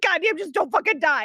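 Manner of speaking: put-on mad, upset, angry outburst. Acting out a character mad about losing her ice cream: acting out being mad. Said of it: "she's very mad about it".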